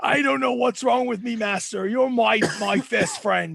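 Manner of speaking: put-on sorry, submissive, apologetic dog voice. Voicing the dog after it bows in a submissive position: apologetic dog voice. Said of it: "you can just tell it's basically".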